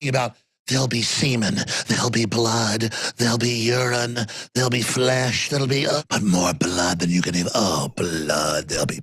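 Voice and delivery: put-on sinister, evil vampire voice. A man in his element, talking in an evil vampire voice. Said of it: "he goes from an evil vampire voice".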